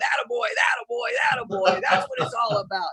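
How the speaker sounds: put-on high, thrilled, excited coach cheering, repeated. Retelling the coach in the shower after the game: imitating Dana Potter screaming. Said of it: "screaming at me".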